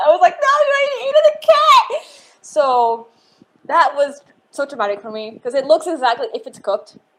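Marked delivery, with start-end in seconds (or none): 0.4-2.1 very high, loud, tearful crying outburst. Retelling a childhood story about a rabbit, retelling own crying freakout. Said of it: "I freaked out crying".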